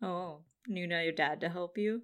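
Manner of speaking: put-on teasing voice. Retelling a scene, imitating Hinata's trolly tone. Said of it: "I just like how she says it, like, very, like, trolly".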